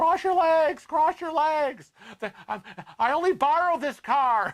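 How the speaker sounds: mock screaming. Retelling a birth story, the father in the car: imitating a father screaming. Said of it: "My father was screaming at my mother".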